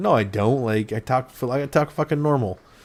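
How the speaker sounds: ordinary talk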